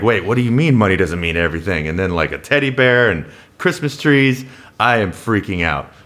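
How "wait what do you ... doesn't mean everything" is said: normal talking voice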